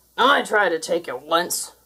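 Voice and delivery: growled, dragged out. Mutsok answers Trapper in their argument, growled. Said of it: "growled Mutsok".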